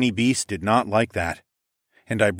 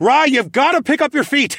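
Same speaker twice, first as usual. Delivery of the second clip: sharp, very high, loud bark; 6 dB louder than usual. Narrating, the speaker yanks stumbling Rylan back by his tunic: barked command. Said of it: "I barked".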